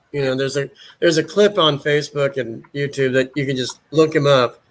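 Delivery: ordinary talk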